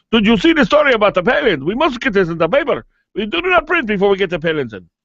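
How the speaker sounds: terrible put-on Italian accent. A host imagines a newspaper publisher in Barcelona reacting, terrible Italian accent. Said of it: "That's a terrible Italian accent".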